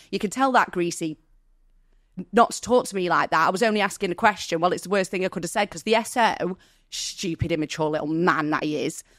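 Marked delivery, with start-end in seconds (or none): none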